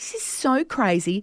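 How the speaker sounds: plain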